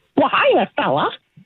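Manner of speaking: high cartoon mouse impression. Asked by the others to hear it, a guest greets them in Mickey Mouse impersonation. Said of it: "I do a Mickey Mouse impersonation".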